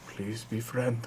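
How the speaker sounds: very quiet, barely audible under-the-breath mutter. A player's character speaking in giant, under the breath. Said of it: "Under my breath".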